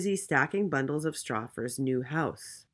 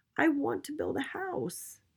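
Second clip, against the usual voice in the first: very high, courteous little piglet voice; 11 semitones higher, 4 dB quieter than usual. Narrator voicing the second little pig speaking to a woodcutter; polite little pig voice. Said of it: "asked the little pig".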